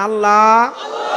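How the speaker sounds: loving, loud calling voice.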